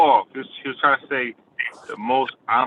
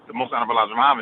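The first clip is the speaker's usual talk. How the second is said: words slurred and run into one string. Showing how others say a long title: said fast, run together. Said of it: "you guys say it fast like this".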